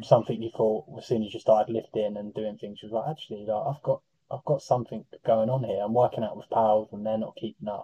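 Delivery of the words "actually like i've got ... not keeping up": usual speaking voice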